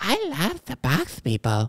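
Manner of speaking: high-pitched, swooping voice with a lisp. Trying to remember how the voice goes in front of a listener, high-pitched Mike Tyson impression. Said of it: "you making his voice so high pitched?".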